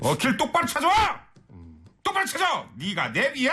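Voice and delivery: mock angry yelling, high and wide.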